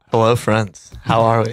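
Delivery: put-on creepy sinister voice. Greeting friends at the start of the show: put-on creepy Hannibal Lecter voice. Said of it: "that wasn't creepy".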